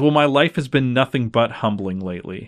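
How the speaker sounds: plain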